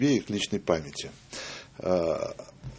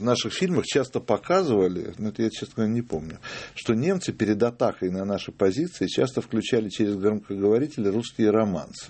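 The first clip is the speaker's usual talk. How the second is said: ordinary talk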